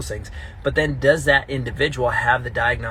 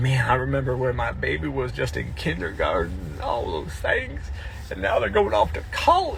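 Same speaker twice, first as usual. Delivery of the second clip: weird, sing-song put-on southern accent. Imitating a parent of a graduating senior: put-on Southern accent. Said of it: "I get southern when I make that weird voice".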